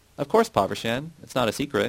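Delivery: ordinary delivery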